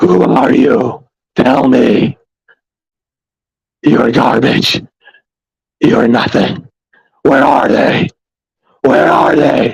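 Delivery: rough, always-furious, angry growling voice. Mimicking the voice he had in the movies, mock angry growling voice. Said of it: "that growling voice that he had".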